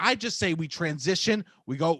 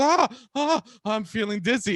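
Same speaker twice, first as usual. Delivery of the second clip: dizzy, faint-sounding voice; 3 semitones higher than usual. Retelling his mom getting faint over no reviews: imitating mom feeling faint. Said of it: "she gets all faint".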